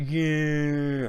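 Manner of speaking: high mocking voice.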